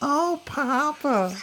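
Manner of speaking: put-on tiny, childlike, very high little girl voice. Retelling hitting a bump on the highway and hearing a little girl voice. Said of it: "hear this little girl voice go".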